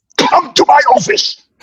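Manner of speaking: angry, very high, through gritted teeth. Retelling a shaking boss with gritted teeth giving a summons: imitating an angry command. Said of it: "summoned to somebody's office in that tone".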